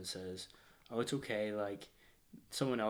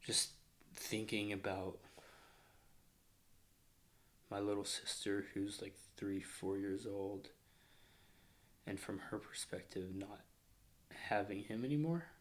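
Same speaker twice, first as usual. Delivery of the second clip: getting emotional, sad; 3 dB quieter than usual. Remembering a young sister who lost her father, getting emotional. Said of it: "I'm getting sad, really".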